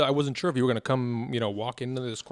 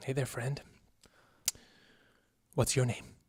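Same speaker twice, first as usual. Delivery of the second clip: low, quiet, hushed near-whisper; 5 dB quieter than usual. Game master voicing a guy who turns around to speak; low voice. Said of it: "kind of in a low voice".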